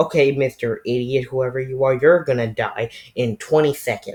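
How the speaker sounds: ordinary talk, nothing marked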